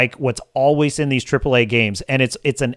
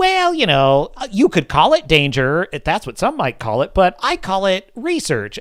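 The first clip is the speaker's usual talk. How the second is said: mock annoying perky voice, higher; 6 semitones higher than usual. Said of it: "an annoying, perky voice".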